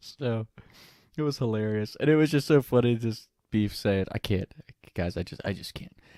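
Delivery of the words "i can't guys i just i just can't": mock dramatic complaining, quieter. Retelling how a teammate complained about running: imitating a friend being dramatic. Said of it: "Beef was so dramatic when it came".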